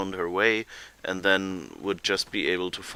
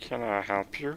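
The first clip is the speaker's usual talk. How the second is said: cool cartoon frog puppet voice; 2 semitones higher, 5 dB quieter than usual. Repeat the question of someone with a cool voice, in a Kermit the Frog voice. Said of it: "He has a cool Kermit the Frog voice".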